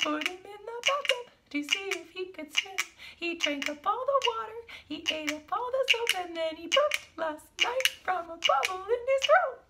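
put-on very high, teeny tiny little voice. Demonstrating different voices for a story, now the teeny tiny high voice. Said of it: "Let's hear the teeny tiny high voice".

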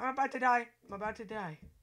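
loud, high, anxious, on-edge exclamation. Playing a deadly wand game, fearing you're about to die: nervous. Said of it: "I am so nervous right now".

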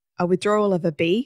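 ordinary delivery

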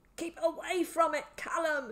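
wet, sputtering, high spluttering outburst. A man calls out to Callum from up close: spluttering. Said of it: "he spluttered as drool fell from his gaping mouth".

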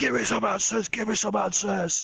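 put-on, very high-pitched screaming. Retelling a scene where Galahad punches a man on a bridge: imitating Galahad screaming. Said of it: "just screaming".

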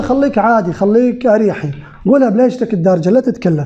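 ordinary talk

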